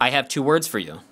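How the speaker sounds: ordinary delivery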